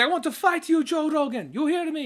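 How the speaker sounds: bad put-on Brazilian accent, pitched very high. Speaker retells a brazilian man challenging joe rogan to fight; bad brazilian accent. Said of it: "it was the accent that threw me off".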